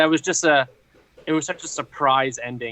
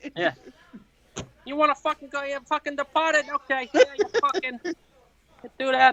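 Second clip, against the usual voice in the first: fake, high-pitched, laid-on South Boston accent; 13 semitones higher than usual. Friends joking about Boston accents, one demonstrates a mock South Boston accent. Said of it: "that like South Boston accent".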